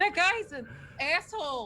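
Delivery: loud yelling. Voicing a character at the back of the line: yelling from the back of a line. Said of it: "she's just yelling at the back".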